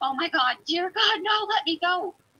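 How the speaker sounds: high, frantic, put-on panicked woman's screaming. Retelling hearing a woman while letting the dogs out, imitating a woman screaming. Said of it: "we hear a woman screaming".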